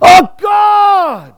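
very high, loud, broken anguished cry, "God" stretched. Speaker demonstrates how a man cries out to god, crying out. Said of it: "a cry is like what the sound guys hate because it peaks everything".

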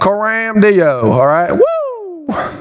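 exaggerated Texas drawl with drawn-out, swooping "woo". Explaining a latin phrase, the speaker imitates the audience in an exaggerated texas accent. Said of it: "or as we would say in Texas".

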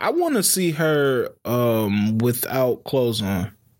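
usual speaking voice

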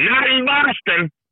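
acted-out very high, high-pitched yelling shout. Retelling a fan's reply during a game: imitating a fan yelling back. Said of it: "he yells back".

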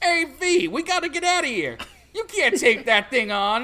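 exaggerated New York accent. A player imitating V's bird from the game, New Yorker stereotype accent. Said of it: "just sounds like a New Yorker stereotype".

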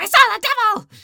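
piercing, very high, very loud shriek. Retelling a scene where the blonde girl in the cabin screams: imitating someone screaming.

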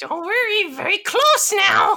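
very high, loud, sing-song, swooping goblin creature voice. Voicing a large goblin turning to attack: goblin voice. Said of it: "the larger goblin's turn ... it says again".

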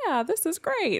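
tiny, very high little moose voice. Retelling how she checked with the moose for her brother, little moose voice. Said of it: "she did the little moose voice like".

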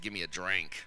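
with a little attitude. Showing the congregation how to say the line: with a little attitude. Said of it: "say with a little attitude".

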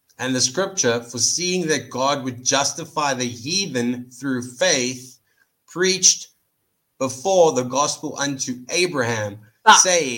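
slow, careful, deliberate, unhurried reading aloud. Asked to read the verse real slow so he can be stopped, slow reading. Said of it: "Just read it real slow".

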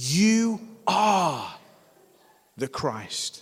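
emphatic, firm, certain, definite delivery. Speaker quoting someone's reply to the group, retelling an emphatic declaration. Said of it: "But he says emphatically".

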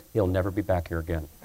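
hushed, very soft half-whispered aside. Retelling a pastor's remark about the last preacher: imitating Pastor Hagan half-whispering. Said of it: "And he whispers".

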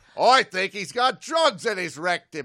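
very loud, put-on Australian accent. Commenting on a man with flight psychosis and crazy eyes, switching into an Australian accent. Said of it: "I got to do an Australian accent".

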